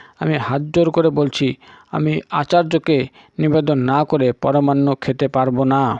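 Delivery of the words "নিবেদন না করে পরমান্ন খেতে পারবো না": ordinary delivery, nothing marked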